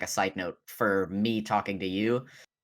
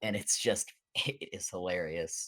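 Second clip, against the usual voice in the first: ordinary talk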